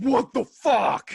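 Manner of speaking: very high, loud, angry gangster outburst. Retelling how his wife jumped up after a scare: imitating wife's angry voice. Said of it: "she sounds like that".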